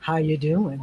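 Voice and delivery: very deep, very low radio announcer voice. Greeting a viewer who tuned in to the stream, using a radio voice. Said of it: "My radio voice".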